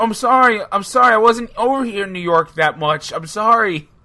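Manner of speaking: acted, downcast, sorry-sounding sad tone. Retelling a backstage apology, imitating Vader sounding sad. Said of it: "he got really, like, really, like, sad sounding".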